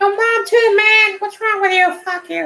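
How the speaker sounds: put-on high cartoon kid voice.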